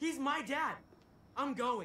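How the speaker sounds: yelling angrily. Insisting on going after Dad while others object: yelling. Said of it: "why are y'all yelling?".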